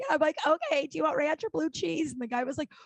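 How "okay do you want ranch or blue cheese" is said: sobbing, pitched-up, words pushed out through crying. Retelling taking a customer's wing order, retelling talking while sobbing. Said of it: "Because I'm I'm sobbing".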